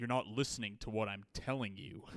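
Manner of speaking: put-on heavily enunciated, overdone American accent. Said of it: "very pronounced".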